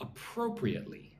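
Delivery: appropriately, second syllable pro stressed. Modelling the word for listeners to repeat, stress on 'pro' in appropriately. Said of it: "Put the emphasis on the second syllable".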